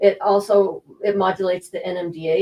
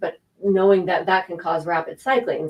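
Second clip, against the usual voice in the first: normal talking voice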